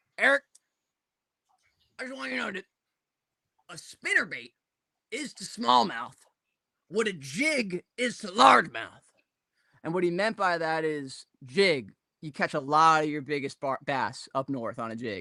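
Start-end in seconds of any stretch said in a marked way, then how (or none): 0.2-9.1 ex-garbage man, chain-smoker's way of speaking, done straight. Retelling advice from a former garbage man who smoked heavily: imitating Tom Wolverton's voice. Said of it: "he literally talk like this".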